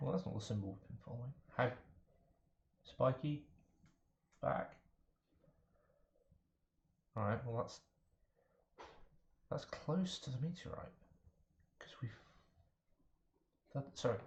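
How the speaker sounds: hushed whisper throughout. Talking with the party near a big bear: whispering. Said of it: "still whispering because there's a great".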